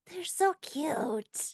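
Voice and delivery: high, whispery, carrying stage whisper. Game master voices a whisper Senna hears as tiny claws dig in, hushed whisper. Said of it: "a hushed whisper of".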